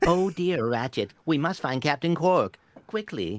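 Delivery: robot voice. Asked to do the Clank voice, the speaker performs the Clank voice. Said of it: "The Clank voice. You mean this one here?".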